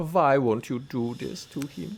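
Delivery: slow, mock Eastern European accent.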